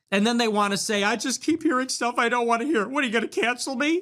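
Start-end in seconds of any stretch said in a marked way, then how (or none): 1.0-2.8 sobbing, crying, tearful voice. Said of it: "you're crying and saying".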